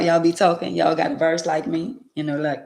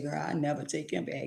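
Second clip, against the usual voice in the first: soft, tearful speech, words sobbed out; 13 dB quieter than usual. Admitting a past vow never to take him back: mock crying while talking. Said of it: "crying at the same time".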